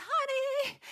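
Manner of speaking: very high, choked, strangled squeak. Imitating my husband saying honey, high-pitched, strangled voice. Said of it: "in this kind of high pitched, strangled sounding voice".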